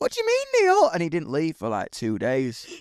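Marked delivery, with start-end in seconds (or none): 0.0-0.9 very high, upset, distraught voice. Telling a story, the speaker voices a man's wife on the phone, imitating her distress. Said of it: "she's like really distraught".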